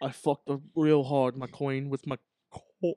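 character voice, talking with mint in mouth. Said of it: "gotta talk like you got a mint in your mouth".

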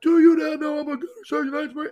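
acted very high, in-your-face screaming yell. Retelling a gunny jumping his desk to get in a kid's face, retelling a gunny's yelling. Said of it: "And he's in this kid's face yelling at him".

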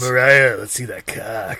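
deep, low cartoon character voice, in character. Doing a requested character voice for friends: voice of Maurice. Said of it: "in the voice of Maurice".

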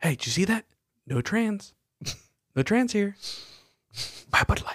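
quiet whisper, pitched high. Retelling a whisper to his wife after a commercial ended: retelling a whisper. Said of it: "I whispered to my wife".

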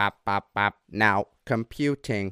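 clunky put-on old-computer robot voice. Imitating how old, huge computers used to speak, in a fake robot voice. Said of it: "the fake robot voices".

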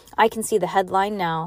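plain reading voice

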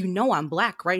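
put-on frustrated voice. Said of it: "my dad's getting so frustrated".

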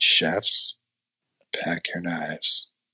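low, calm, flat monotone that trails off. Talking about Padma's impressive monotone, address the chefs in a very calm, monotone Padma impression. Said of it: "Very calm".

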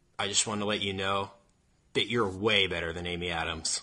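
put-on straight-faced tone. Recalling a line they wanted to say to her, retelling it deadpan. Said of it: "with a completely straight face and say".

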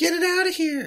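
high, whiny yelling.

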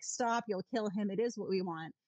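ordinary talk

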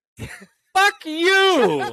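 very high, swooping, fuming, furious outburst. Teased as the redneck by the others, the speaker snaps back, mad. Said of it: "I'm so mad right now".

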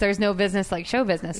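ordinary talk, nothing marked

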